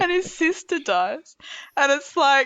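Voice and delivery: talking through laughter. Retelling a sad TV episode scene, laughing while talking. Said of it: "How are you laughing?".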